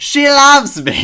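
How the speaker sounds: very high, very loud, shrill, piercing belted call. Imitating an actress announcing a play at an awards show: Jean Stapleton impression. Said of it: "that's a niche impression".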